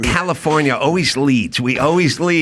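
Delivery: normal talking voice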